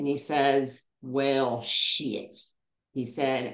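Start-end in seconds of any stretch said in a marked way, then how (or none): 1.0-2.4 put-on deep Southern accent. Retelling what a fellow hiker with a trail name said: Woodstock's deep Southern accent. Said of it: "deep Southern accent".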